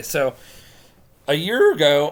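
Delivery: voice cracking and breaking. Speaker starting a story, voice cracking. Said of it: "my voice just cracked there really bad".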